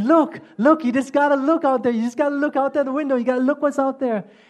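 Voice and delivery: wild, urging, high-pitched screams. Retelling how the minister reacted on the train: imitating the minister screaming. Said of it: "screaming and jumping up and down and screaming".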